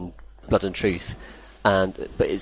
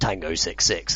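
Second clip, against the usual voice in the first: put-on London accent in action-film style. Describing a British action game, quoting its characters: London accent. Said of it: "people with, uh, London accents going".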